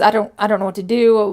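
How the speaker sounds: plain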